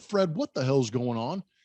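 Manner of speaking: ordinary talk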